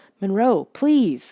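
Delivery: tremulous, trembling, quavering voice. With the creature Monroe standing over them, the narrator pleads; trembling voice. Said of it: "I said in a trembling voice".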